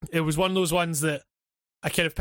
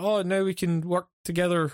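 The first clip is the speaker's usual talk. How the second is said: ordinary delivery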